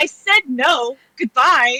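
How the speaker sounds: loud, slow, drawn-out shout. Retelling a delivery person yelling back: imitating delivery person yelling back. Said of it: "the delivery yells back".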